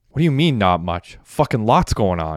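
ordinary delivery

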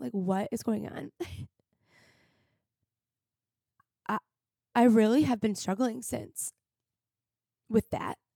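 tearful speech, crying while talking. Describing a hurtful remark made to the speaker, crying while talking. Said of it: "I don't know why I'm crying".

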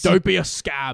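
London Cockney accent. Showing the others how Cockney sounds: Cockney accent.

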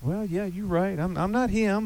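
calm, even tone. Recounting his answer to a man shouting at him, retelling a calm reply. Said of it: "I'm staying calm".

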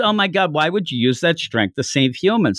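plain

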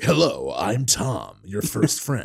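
slow, drawn-out sing-song, swooping up and down. Imagining a website founder as the announcer: MySpace Tom's voice. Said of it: "Can you imagine that was MySpace Tom's voice?".

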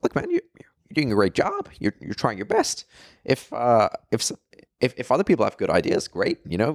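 put-on animated voice, pitch swinging wide and hard. Retelling a friend's advice to another speaker: Jordan Peterson impression. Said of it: "Was that a Jordan Peterson impression?".

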